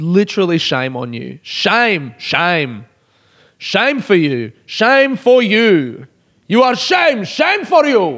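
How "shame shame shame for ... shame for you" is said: repeated, high, swooping, scolding shouts. Raving about the best final to anyone who didn't watch it, yelling. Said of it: "I'm sorry for yelling".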